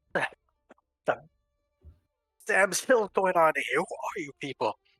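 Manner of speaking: authoritative man yelling. Voicing the village's man in charge, confronting strangers: man in charge yelling. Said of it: "and he yells, he goes".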